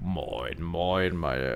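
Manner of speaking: very low, deep, raspy, smoky and rough voice. Imitating how Monte talks, in a deep smoky Monte voice. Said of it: "so eine tiefe Stimme, so verraucht. ... Wirklich, so redet er".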